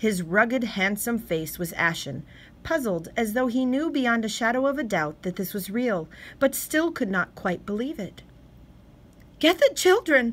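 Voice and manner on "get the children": sudden, very high, loud blurted outburst. A wife speaks to her husband right after the radio alert, blurting. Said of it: "his wife blurted".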